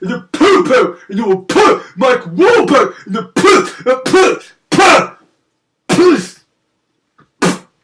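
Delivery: put-on spitting delivery. Mocking people who don't understand quality films, imitating, spitting out the words. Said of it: "the way you spat out poo".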